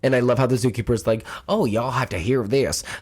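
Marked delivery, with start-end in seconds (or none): 1.5-2.8 fake American southern accent. Quoting a zookeeper while retelling a story, southern US accent. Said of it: "I'm giving him a southern accent".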